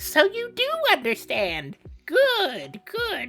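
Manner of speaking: very high, weird, swooping villain voice. Reading a character's lines aloud, in a weird put-on voice. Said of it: "pardon my weird voices".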